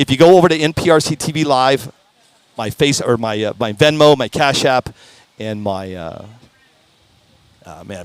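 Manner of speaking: barely getting the words out, choked up. Speaker asking the audience to donate if they can, choked up. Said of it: "I'm choked up".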